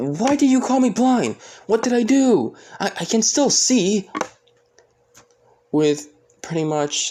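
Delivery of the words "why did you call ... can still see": shrill, very high-pitched, loud shouting. Retelling a scene where a character yells back at someone, retelling a yell. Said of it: "With Asta yelling at him saying".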